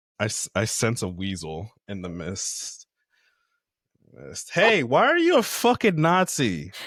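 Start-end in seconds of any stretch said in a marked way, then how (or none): 4.5-6.7 very high, shrill, swooping yell. Acting out confronting someone in the building, pretend yelling. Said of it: "just start yelling it".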